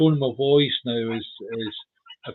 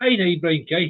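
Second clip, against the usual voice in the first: Northern Irish pronunciation; 5 semitones higher than usual. Comparing how a phrase is pronounced, saying it in a northern irish accent. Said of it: "as I say in Northern Ireland".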